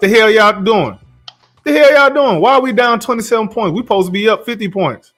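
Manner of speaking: high-pitched ranting. Imagining being the coach yelling at the players: imitating Ime Udoka yelling. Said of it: "I'm in there yelling at everybody".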